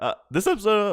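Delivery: voice breaking into a very high crack. Speaker asks the others what they thought of the episode; voice cracks. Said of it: "oh, hello, voice crack".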